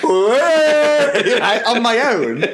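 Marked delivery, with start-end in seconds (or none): 0.0-1.4 high, loud mocking, jeering "whoa". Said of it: "and I went".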